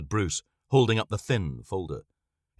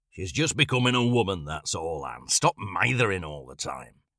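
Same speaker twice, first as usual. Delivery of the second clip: said gruffly. Narrator reading Mr. Scott's line, gruff. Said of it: "said Mr. Scott gruffly".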